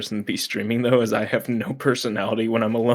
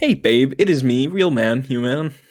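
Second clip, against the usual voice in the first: American-sounding cartoon cow voice; 3 semitones higher, 3 dB louder than usual. Quoting the cow from the A D S F movie: imitating the cow from the A D S F movie. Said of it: "The cow is, is so entertaining".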